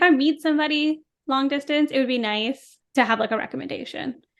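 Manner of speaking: ordinary talk, nothing marked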